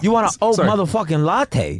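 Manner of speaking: put-on New York accent. Joking about new york coffee servers who talk like the comedian: imitating a new york server. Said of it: "a bunch of people just speaking like that".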